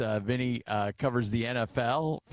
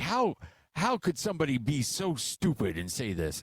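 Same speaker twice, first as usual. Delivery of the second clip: put-on irate, angry ranting voice; 2 semitones higher than usual. Retelling a family member's reaction to sports odds: imitating someone irate. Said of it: "he was just irate about this".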